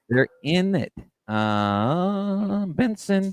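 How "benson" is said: high voice breaking, cracking in the middle of a word. Starting to name someone on the show, voice cracking. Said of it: "my voice cracked".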